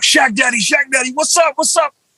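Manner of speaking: mock, high, eager, excited hollering. Speaker recalls running up to a man taking pictures, calling out: retelling a shout. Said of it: "And I just shout".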